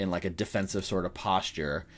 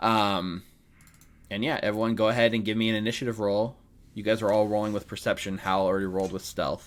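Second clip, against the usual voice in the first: ordinary talk, nothing marked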